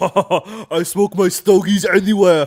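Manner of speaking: very loud, booming, drawn-out, boastful, laughing delivery. Imitating a clip of Arnold Schwarzenegger talking about cigars: Arnold Schwarzenegger voice. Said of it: "He's like".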